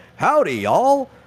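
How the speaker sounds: put-on very high, loud announcer voice with Texan accent. Talking about the state fair, speaker imitates Big Tex's greeting: Big Tex impression. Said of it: "you hear Big Tex and he's like".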